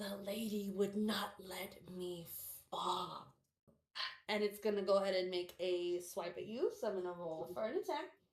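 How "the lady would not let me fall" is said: husky voice from the grave. A game master voices a creature speaking before it attacks, in a husky voice. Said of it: "you hear this husky voice".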